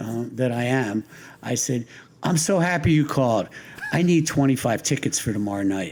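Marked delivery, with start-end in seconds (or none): 2.2-5.9 put-on, cheeky, smart-aleck wise-guy tone. Retelling own joking reply to a caller thought to be a prankster: retelling own wise-guy quip. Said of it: "in my notorious wise guy".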